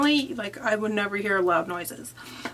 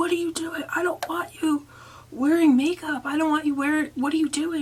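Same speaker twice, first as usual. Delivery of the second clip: acted-out screaming, higher; 7 semitones higher than usual. Telling the guys a story, acting out what a drunk man screamed: retelling a man screaming. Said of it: "he was screaming about how".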